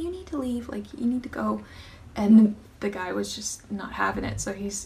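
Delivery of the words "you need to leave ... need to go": gentle, quiet, timid, soft-spoken voice. Retelling Hunter telling a customer to leave: imitating Hunter's soft-spoken voice. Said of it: "quiet and shy and, and very soft spoken".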